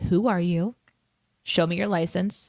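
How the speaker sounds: acted wary, protective tone. Retelling watching the ice cream truck from the porch, as a mock-suspicious protective mom. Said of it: "I'm the mom on the porch just like".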